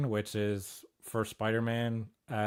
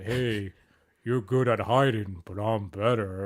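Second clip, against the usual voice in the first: loud tough-guy movie boxer voice; 6 dB louder than usual. Imitating an actor's line delivery: mocking Rocky Balboa voice. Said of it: "a person mocking Rocky Balboa".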